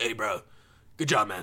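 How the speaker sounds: easygoing, back-patting gym bro voice. Retelling a gym worker's compliment while working out: imitating a gym worker. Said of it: "hear my voice".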